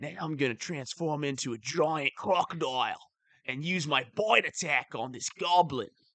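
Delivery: put-on Australian-accented speech. Playing a druid character in a game of D and D, in Steve Irwin voice. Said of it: "I'm doing a Steve Irwin character".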